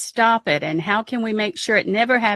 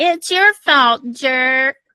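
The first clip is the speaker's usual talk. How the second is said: put-on cross, angry childish outburst; 3 semitones higher, 4 dB louder than usual. Playing an angry child again this week: mock-angry childish outburst. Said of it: "I'm going to be an angry child again and say".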